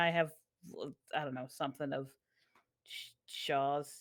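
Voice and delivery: ordinary talk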